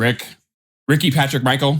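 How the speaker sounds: calling out a rapid string of names in mom voice. Imitating mom calling out all the names: imitating mom calling names. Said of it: "She goes".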